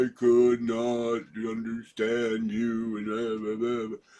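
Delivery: insultingly slow, over-enunciated, drawn-out speech. Retelling what rude listeners say when they can't understand the speaker, mocking overly slow talk. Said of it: "They start talking real slow".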